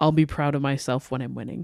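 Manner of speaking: mock dead-serious, low, quiet, expressionless deadpan delivery. Quoting a rookie's answer to her mom's question, retelling a deadpan reply. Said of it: "she literally says deadpan".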